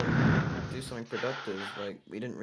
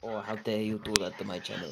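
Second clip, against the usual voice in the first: fake, put-on Russian accent. Quoting an unnamed creator's imagined reply, the speaker uses a put-on russian accent. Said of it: "I just put on the accent for no good reason".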